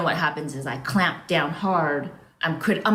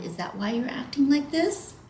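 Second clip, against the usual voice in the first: caring, gentle, pitched-up soothing voice; 9 semitones higher than usual. Talking to yourself about acting out, in a put-on parenting voice. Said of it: "you don't need to talk to yourself in this voice, by the way. This is just an example. You don't need to use like a, a parenting voice".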